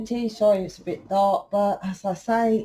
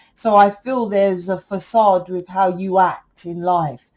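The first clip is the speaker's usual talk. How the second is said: plain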